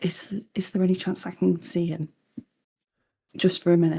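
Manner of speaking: very meek, almost whispering. Voicing a character asking the lord to see him: almost a whisper, very meek. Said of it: "coming across as almost a whisper and very meekly".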